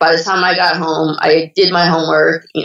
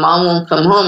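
normal talking voice

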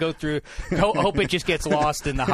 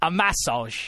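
put-on English accent; 2 semitones higher than usual. Repeating another speaker's word back in a put-on english accent. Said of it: "my English accent is getting to be better than yours".

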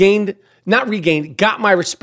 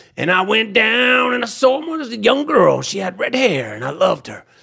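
mock heartland rock-star voice, teasing and swooping. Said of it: "that's my impression of [name]".

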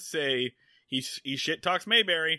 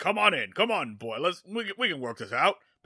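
put-on cartoon rooster voice. Retelling how a man invited someone into his office, in a Foghorn Leghorn voice. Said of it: "Apparently he's Foghorn Leghorn".

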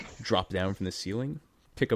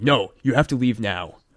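livid, furious, very loud screaming; 3 semitones higher, 10 dB louder than usual. A game master voicing a livid father who starts screaming at the players: furious screaming. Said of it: "he just starts screaming at you".

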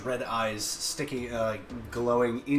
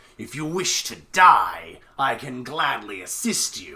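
menacing, threatening creature voice, louder; 7 dB louder than usual. Voicing the illusion's voiceover for the costumed creature: menacing monster voiceover. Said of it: "create the voiceover for the Groot slang".

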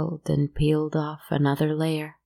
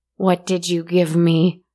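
loud shouting with audible dawning horror; 2 semitones higher, 5 dB louder than usual. The wealthy woman, breathing harder, turns on the other woman, shouted. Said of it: "she shouted".

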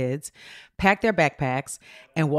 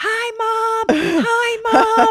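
very high, very stretched-out, drawn-out scream. Retelling a daughter spotting her car and calling out: imitating a daughter screaming. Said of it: "she starts screaming".

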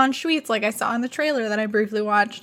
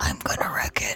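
barely voiced, hushed, breathy whisper under the breath; 5 dB quieter than usual. Imitating the film character saying his line: imitating a whisper. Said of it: "He just whispers".

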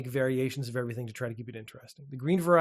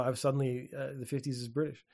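ordinary talk, nothing marked

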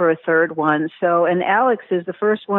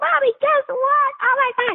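very high, thrilled, excited burst, acted out. Retelling a phone call to a son after hearing news: retelling own excited words. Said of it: "I was so excited".

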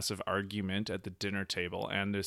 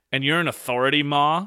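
very loud, high, mock derisive, condescending tone; 6 semitones higher, 12 dB louder than usual. Retelling how a man answered his mom, very derisively and condescendingly. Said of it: "very derisively and condescendingly".

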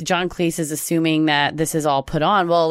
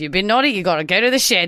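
put-on Australian accent. Quoting a favorite movie phrase to the others, in an Australian accent. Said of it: "he's like doing this Australian accent".

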